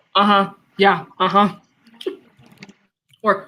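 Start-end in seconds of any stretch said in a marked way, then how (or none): 0.2-1.6 put-on condescending tone. Joining in recalling a video reaction: imitating a condescending uh-huh. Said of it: "I like when he condescendingly says".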